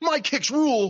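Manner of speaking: mock smug, brash, cocky, high scream. Retell the funny moment he hits a running boot before the crowd, imitating someone screaming. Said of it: "he screams".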